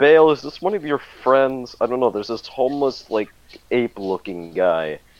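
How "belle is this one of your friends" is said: loud shouted call, yelling. A player in character calls to Belle about a stranger, yelling. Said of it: "I'm yelling at him".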